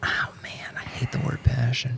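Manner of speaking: soft, unvoiced whisper full of disgust.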